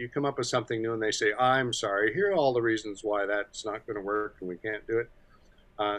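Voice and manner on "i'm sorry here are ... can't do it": ordinary delivery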